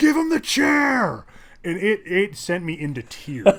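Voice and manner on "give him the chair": very high-pitched, loud shouted yell. Retelling a movie scene where a commoner yells: imitating a yell. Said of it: "one of the commoners just yells".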